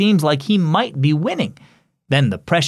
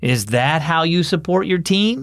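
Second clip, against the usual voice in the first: playful, gently mocking, teasing tone; 2 semitones higher than usual. Grandpa calls Marco back after he stands up during his team's game, teasing. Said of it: "Grandpa teased".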